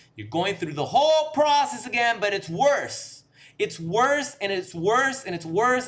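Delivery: loud, high, impassioned screaming. Describing the cycle of going back to a cheating partner: screaming. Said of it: "I don't know how I'm screaming right now".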